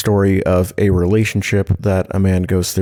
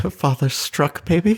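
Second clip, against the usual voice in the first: put-on sad victorian child voice, higher; 9 semitones higher, 4 dB quieter than usual. Speaking for the pet cat as a sad Victorian child.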